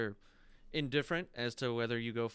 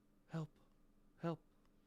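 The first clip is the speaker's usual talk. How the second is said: woman's faint whispered call, sounding far off; 6 semitones higher, 8 dB quieter than usual. Describing a sound heard in the distance, imitate a female voice calling out. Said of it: "a female voice, and it's calling out".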